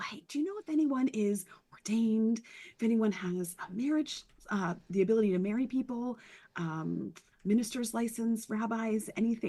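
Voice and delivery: hushed whispering voice. Playing a character asking around discreetly at a wedding: whispering. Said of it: "she's whispering to people".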